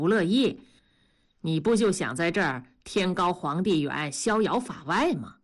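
usual speaking voice

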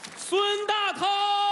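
calling voice.

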